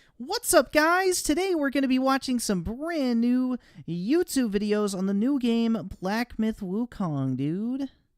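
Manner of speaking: high-pitched, loud voice with swooping pitch. A show host who sounds flat mocks being a super happy, positive YouTuber. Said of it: "Do I need to be like super happy and positive".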